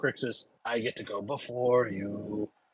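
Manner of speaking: whispering. A character whispers to Crixus at the top of the round, whispering. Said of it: "he whispers to you".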